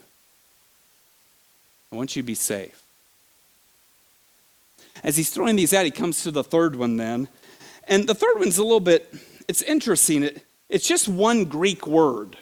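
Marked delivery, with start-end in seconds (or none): 1.9-2.8 said softly again.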